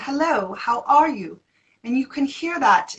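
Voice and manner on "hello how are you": slow, drawn-out, bright, forward voice. Speaker demonstrating a brighter, more feminine voice, in a Mary Poppins voice. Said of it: "I call it the Mary Poppins voice".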